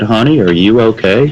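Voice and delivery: acted serene, perfectly calm, unruffled concern. Retelling a woman finding him behind a dumpster and asking about him, imitating a very calm voice. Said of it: "said with the calmest voice".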